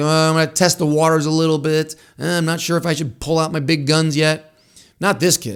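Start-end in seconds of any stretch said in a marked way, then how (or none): none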